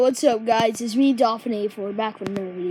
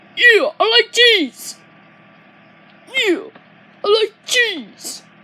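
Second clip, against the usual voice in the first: very high, loud, excited yell; 12 semitones higher, 8 dB louder than usual. Showing off a voice impression, doing the Shark Puppet voice. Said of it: "I can do a voice impression of Shark Puppet".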